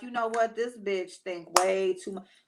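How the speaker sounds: ordinary delivery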